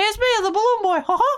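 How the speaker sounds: squeaky voice pitched way up high. Asked to keep the voice, speaker plays the balloon boy: Mickey Mouse voice. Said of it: "you are my personal little Mickey Mouse".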